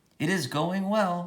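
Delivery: very high, mechanical, machine-like robot voice. Narrator reading Roz answering a man's greeting from a car; robotic voice. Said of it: "said Roz in a robotic voice".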